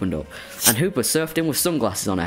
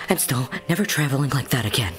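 put-on girly cartoon character voice; 3 semitones higher than usual. After a rough portal trip, Diancie answers Hoopa in a girl voice. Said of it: "my girl voice for Diancy".

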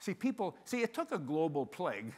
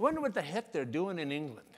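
plain

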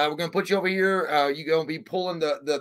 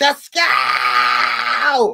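very loud, all-out scream at top of voice; 3 semitones lower, 9 dB louder than usual. Retelling what she shouted in the car with the speaker, retelling a scream. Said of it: "Like screaming like this".

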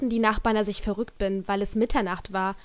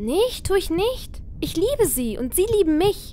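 shrill, very high scream; 9 semitones higher, 4 dB louder than usual. Reading a character's retort to a man mocking their parents, screaming. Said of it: "schrie Emily".

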